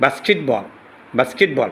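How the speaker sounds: British pronunciation of basketball.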